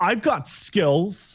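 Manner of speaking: put-on irritated blurt. Retelling a character's blurted reply to an old lady: imitating an annoyed tone. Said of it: "this annoyed tone".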